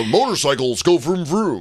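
put-on dumb American voice. Telling an American how Americans sound to them, in a mocking dumb American accent. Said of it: "Because you sound like this".

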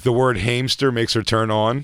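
ordinary delivery

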